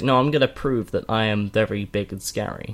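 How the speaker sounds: ordinary delivery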